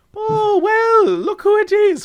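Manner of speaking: put-on Irish leprechaun voice, very high, slow, drawn out. Imagining a character greeting someone into a club: Irish leprechaun voice. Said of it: "it's an Irish dude, like a little leprechaun".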